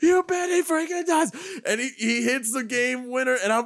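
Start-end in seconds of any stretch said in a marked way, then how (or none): 0.0-1.3 acted-out scream, much higher pitch. Recalling his answer to Tirico's question during the call, retelling his own scream. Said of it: "I'm screaming".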